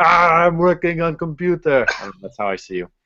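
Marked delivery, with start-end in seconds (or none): 0.0-1.9 pitched-up, furry puppet monster voice. Speaker picturing the listener working on the computer, in a Cookie Monster voice. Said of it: "I just pictured like the Cookie Monster".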